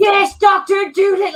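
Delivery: put-on screamed, very high and loud Cockney accent. Retelling two British gamers mocking a game: imitating gamers screaming in Cockney. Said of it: "They were screaming Cockney all over".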